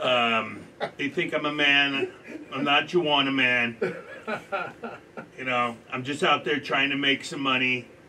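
loud put-on voice, laughing through it. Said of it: "do her impersonation so well".

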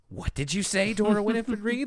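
put-on grave, serious voice. Recapping a cartoon scene, acting out the mom's line in a mock-serious voice. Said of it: "you really have to put on the most serious voice here".

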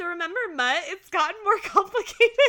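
high, loud hollering, projected to carry far. Recapping a scene with Moira and Alexis; imitating Alexis yelling across field. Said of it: "she's yelling this across the field".

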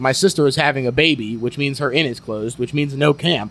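plain

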